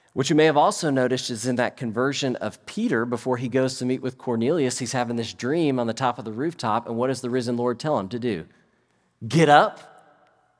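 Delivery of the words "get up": "get up" stressed, punched much louder. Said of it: "Did you notice I tried to emphasize the word?".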